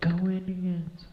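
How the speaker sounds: high, slow, mild mock yell, woman's voice, stretched out.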